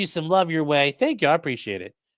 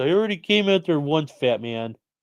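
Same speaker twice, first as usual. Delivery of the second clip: dog impression voice. Speaking for the sleepy dog who was woken up: voicing the dog Clyde. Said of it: "probably like".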